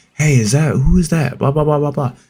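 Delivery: mock whispering. Retelling whispering a question to a girlfriend in the theater: retelling a whisper. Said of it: "whisper to her".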